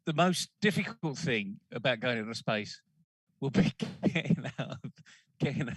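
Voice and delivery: speech breaking into laughter, laughing through words. Recounting what a man said in an interview, laughing while talking. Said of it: "I'm laughing".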